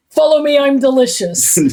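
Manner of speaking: put-on Irish accent. Quoting a TikToker's sign-off: imitating an Irish TikToker. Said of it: "he always ends his, his TikToks with".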